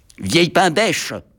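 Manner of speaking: cheeky, impudent, insolent tone. Narrator reads the little locomotive replying to the headmistress; insolent retort. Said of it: "répliqua insolemment la petite locomotive".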